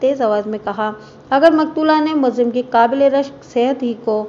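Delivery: ordinary delivery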